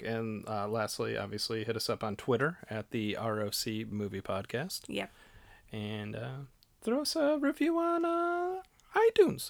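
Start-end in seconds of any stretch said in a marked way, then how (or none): 6.8-9.5 voice gone way up, very high-pitched. A podcast host wrapping up the episode's sign-off, in a high-pitched voice. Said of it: "I don't know why my voice got so high".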